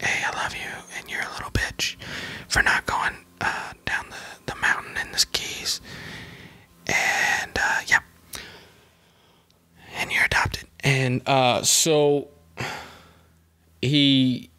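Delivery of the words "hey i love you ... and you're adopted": tender, very sweet, soft whisper. Retelling what a dad whispered to his son: imitating a sweet whisper. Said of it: "he whispers something, right, just real sweet to his son".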